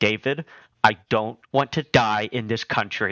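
acted, utterly earnest, dead-serious straight deadpan delivery. Retelling what the mother said in the speeding car: imitating a dead-serious tone. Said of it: "with the straightest tone I've ever heard".

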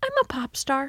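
sweet, tiny little voice. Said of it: "in the cutest, quietest voice".

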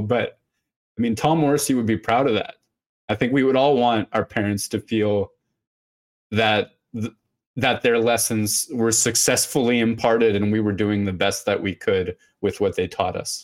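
growing emotional mid-sentence, words running fast. Agreeing with a friend in conversation, getting emotional. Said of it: "I'm getting emotional".

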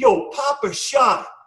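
play-acted very slow, high, drawn-out holler. Retelling how Joe Kim stood up during a live drill: imitating Joe Kim yelling. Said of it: "Joe Kim stands up and yells".

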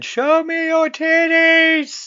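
very high, long-stretched, drawn-out scream. Retelling a character's line from a roller coaster scene: imitating a scream. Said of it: "he's just screaming".

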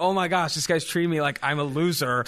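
ordinary talk

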